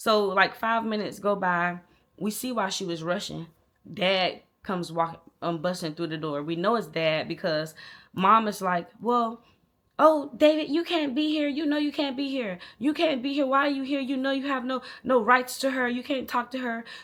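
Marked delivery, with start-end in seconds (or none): 9.0-16.8 high, rising-volume, scolding. Retelling a parent arguing with the other parent: imitating mom getting loud. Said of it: "they're getting a little loud".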